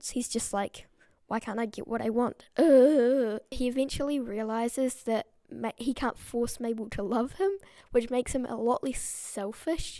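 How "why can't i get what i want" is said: put-on unhinged, crazed-sounding voice. Imitating Gideon when he doesn't get what he wants: unhinged Gideon impression. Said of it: "he's really unhinged when he doesn't get".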